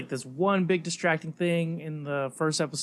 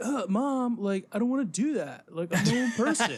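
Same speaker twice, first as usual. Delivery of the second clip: put-on casual, pitched-up American kid voice; 7 semitones higher than usual. Mocking two kids on a show who speak without accents: imitating American kids. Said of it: "these two American kids that are like".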